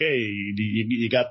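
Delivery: very slow, drawn-out put-on Italian accent. Recalling what families said when Switches were hard to find, in an Italian accent. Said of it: "I don't know why I went into an Italian accent".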